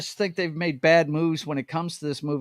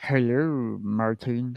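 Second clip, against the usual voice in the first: low, droopy, slow cartoon dog voice; 5 semitones lower than usual. Greeting Martin back in return, doing a Droopy Dog voice. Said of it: "that is to be said in uh, Doopy, uh, Droopy Dog's voice".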